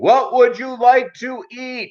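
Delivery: very high, shrill yelling. Retelling ordering food, the speaker imitates the man at the register yelling. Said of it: "he yells at me".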